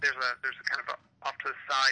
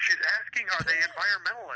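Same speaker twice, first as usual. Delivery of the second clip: high, called-out scream; 5 semitones higher than usual. Retelling how someone in the audience shouted a question to the stage; retelling an audience scream. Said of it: "someone screamed from the audience".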